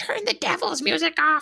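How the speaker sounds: put-on very high, rough, creaky grandmother holler. Quoting the speaker's grandmother yelling at her, yelled grandmother impression. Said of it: "that is a spot on impression of my grandmother".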